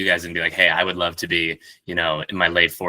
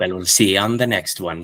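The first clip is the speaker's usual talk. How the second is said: put-on Northern Irish accent. Asked to say the sign-off in the other speaker's accent, Northern Irish accent. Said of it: "you have to say it in my Northern Irish accent".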